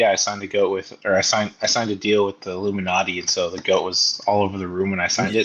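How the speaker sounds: usual speaking voice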